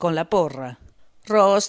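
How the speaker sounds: ordinary delivery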